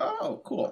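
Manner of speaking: put-on awed young reaction.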